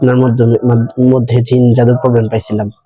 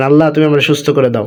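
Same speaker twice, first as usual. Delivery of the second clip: ordinary talk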